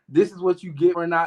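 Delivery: plain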